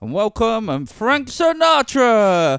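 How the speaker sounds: put-on high, booming old-time 1920s announcer voice. Imagining walking on stage with a cane, doing a 1920s announcer voice. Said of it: "Like in like 1920s, like an announcer".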